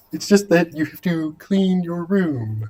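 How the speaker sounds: high, lifted cartoon frog-puppet voice. Talking about Jordan Peterson, doing a Jordan Peterson voice that sounds like a frog puppet. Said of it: "much more like Kermit the Frog".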